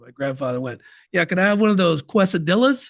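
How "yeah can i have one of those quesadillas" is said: put-on Southern twang, said loudly. Retelling his grandfather ordering at a Mexican drive-through, imitating a Southern twang. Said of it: "he had that Southern twang".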